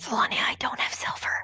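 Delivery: speaking in a whisper. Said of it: "Why are you whispering?".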